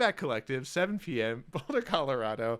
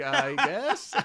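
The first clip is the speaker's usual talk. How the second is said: baffled and unsure, rising tone on every word; 4 semitones higher, 5 dB louder than usual. Teasing the other speaker about sounding baffled, imitating an unsure questioning tone. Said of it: "every word was a question mark".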